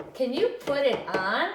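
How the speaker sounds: pitch rising through put it on, up on on. Reading a sentence to the kids at home, rising question intonation. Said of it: "My voice is going to go up because I'm asking a question".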